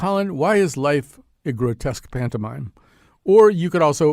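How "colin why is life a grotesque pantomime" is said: plain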